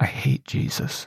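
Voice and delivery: muttering to herself under her breath. Retelling what a woman staring out the window said to herself: muttered under her breath. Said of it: "just like under her breath just to herself".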